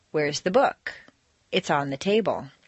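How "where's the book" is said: book stressed, with rising intonation. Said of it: "Normal intonation".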